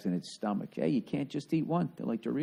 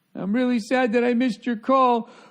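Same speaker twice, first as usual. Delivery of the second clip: put-on crying voice, much higher and louder; 12 semitones higher, 8 dB louder than usual. Mocking a woman's voicemail message, imitating someone crying. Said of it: "I'm not even exaggerating".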